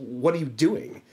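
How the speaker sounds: very forceful, demanding voice. Retelling how a box office manager confronted a seller: imitating Waylon speaking forcefully. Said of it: "very forcefully says".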